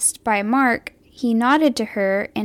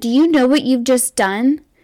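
yelling, louder; 4 dB louder than usual. Retelling what a security guard said to a shooter: imitating a security guard yelling. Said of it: "one of the security guards yelled at him".

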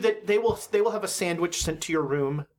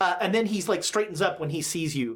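normal talking voice

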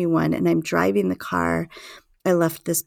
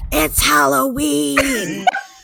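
mock child voice, high and yelled; 8 semitones higher, 5 dB louder than usual. Telling a Halloween story, the speaker acts out the child's yelled reply: imitating a kid yelling back. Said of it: "he just yells back".

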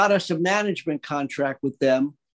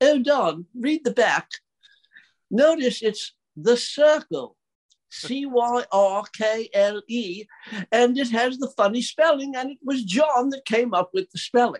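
charming, put-on English accent, pitched up; 7 semitones higher than usual. Retelling what Brian said when handing over a card: charming English accent. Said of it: "in a charming English accent".

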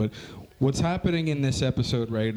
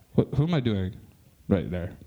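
ordinary talk

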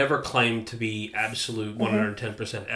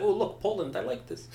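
clumsy, sloppy put-on Russian accent, pitched up high; 9 semitones higher, 5 dB quieter than usual. Acting out Hitler looking at Poland in World War II, bad Hitler impression, Russian accent. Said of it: "I don't know why I went Russian there".

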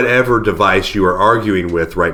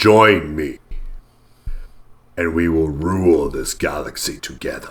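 fake, put-on deep bass register, laid on thick; 4 semitones lower, 4 dB quieter than usual. Joking around in a back-and-forth, perform this in a put-on bass voice. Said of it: "I kind of like this bass voice".

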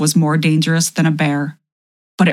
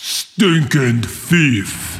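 booming, guttural giant voice like a bull; 3 semitones lower than usual. A giant pins a man under one foot: booming, guttural giant voice. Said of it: "boomed in a voice more guttural than a bull's".

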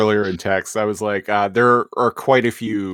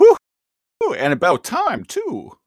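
high character voice with swooping pitch; 9 semitones higher than usual. Quoting a cartoon character's line while recapping an episode: Rat Trap voice. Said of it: "my Rat Trap voice".

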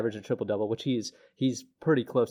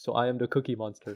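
put-on Eastern European accent. Retelling a basketball player's interview line: imitating Nikola Jokic. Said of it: "and he's like".

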